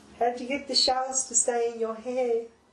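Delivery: eerie put-on voice. Playing a character asking how the shells stay in someone's hair: creepy character voice. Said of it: "the voice is really creeping me out".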